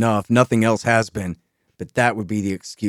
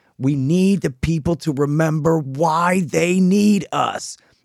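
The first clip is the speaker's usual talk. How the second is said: mock very slow, drawn-out, high-pitched dictator yell; 8 semitones higher than usual. Describing a movie scene, imitating the dictator yelling his line. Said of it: "But he's yelling".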